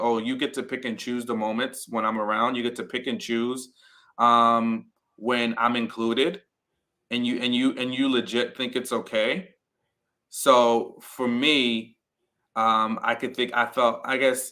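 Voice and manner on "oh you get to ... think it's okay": ordinary talk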